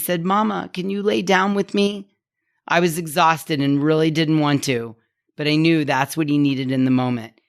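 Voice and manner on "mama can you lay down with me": put-on high little four-year-old child's voice. Retelling a son's bedtime request: little four-year-old voice. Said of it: "In his little four-year-old voice".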